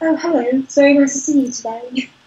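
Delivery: tiny, sweet voice. Speaker describing a sweet friend, imitating Bo's very small voice. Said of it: "he has a very small voice".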